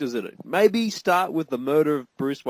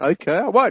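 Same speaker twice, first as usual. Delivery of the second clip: plain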